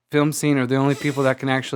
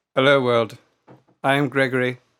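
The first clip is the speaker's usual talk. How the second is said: put-on mid-Atlantic accent. Introduced as the world-renowned shark expert, Gregory greets the world in a mid-Atlantic accent. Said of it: "what is this accent?".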